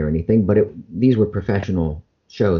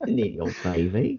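fake Australian accent, quieter; 7 dB quieter than usual. Joking with an interviewer, doing a bad australian accent. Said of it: "I wanna do a bad version of it".

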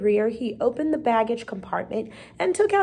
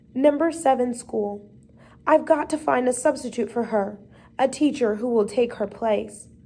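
usual speaking voice

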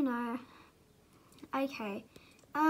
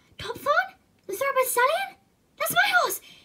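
high, loud overexcited outburst. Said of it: "Calm down, [name]".

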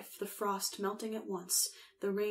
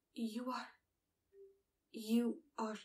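whispered, quieter; 3 semitones higher, 6 dB quieter than usual. The midwife answers across the fire, whispering. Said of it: "whispered the midwife".

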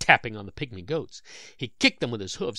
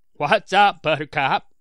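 very loud, high, sarcastic mocking jeer; 5 semitones higher, 10 dB louder than usual. A goat gang leader calls across the paddock to another goat, mocking, sarcastic. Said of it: "No one likes to be called Buttercup in that mocking, sarcastic way".

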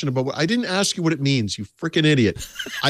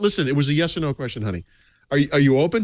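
ordinary talk

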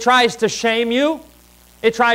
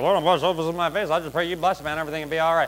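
very quiet, hushed voice; 6 semitones lower, 8 dB quieter than usual. Showing how one could pray without bowing the head: said real quietly. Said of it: "I could say it real quietly".

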